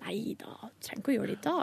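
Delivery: soft, hushed voice like an inner voice.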